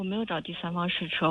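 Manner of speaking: speaking too quietly, soft and barely audible.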